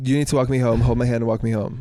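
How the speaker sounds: ordinary talk, nothing marked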